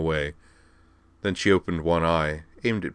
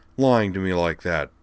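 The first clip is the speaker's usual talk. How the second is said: ordinary delivery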